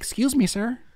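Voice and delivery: very high, soft, polite courtly gentleman's voice. Retelling what a boy in a mask said: imitating a polite gentlemanly voice. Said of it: "the most gentleman voice I ever heard".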